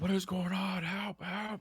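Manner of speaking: panicked screaming. Voicing a grappled, restrained creature trying to get out: screaming for help. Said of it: "It's screaming at this point".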